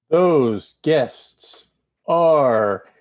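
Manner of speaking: very slow, drawn-out pace. A co-host asked to name an event's guests, very slowly. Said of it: "he says very slowly".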